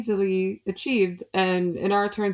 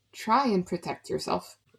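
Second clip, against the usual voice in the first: soft, quiet whispered aside; 4 dB quieter than usual. Pushing Leilani toward the fey, in character: whispering. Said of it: "she'll whisper to Leilani".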